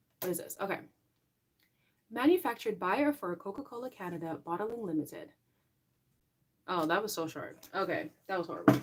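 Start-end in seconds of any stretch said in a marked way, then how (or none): 2.1-5.3 polished, professional announcer-style reading voice. Reading printed text aloud to show listeners a polished professional voice. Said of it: "so I can tell you guys like what my professional voice sounds like".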